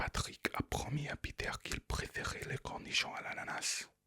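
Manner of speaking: voiceless whispered speech in French. Trying a French practice sentence the second way: whispered. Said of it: "I'm actually going to try and whisper the French".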